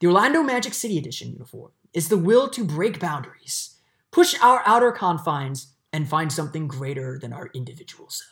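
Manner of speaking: TV science-explainer narrator delivery. Reading a jersey press release aloud in a Neil deGrasse Tyson voice. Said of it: "I'm going into my Neil deGrasse Tyson voice here".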